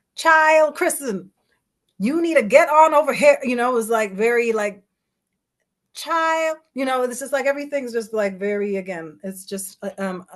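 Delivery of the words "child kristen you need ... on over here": put-on Jamaican accent, long drawn vowels. Speaker recalling how an aunt would call them over, imitating the aunt. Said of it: "what what would my aunt say to me right now".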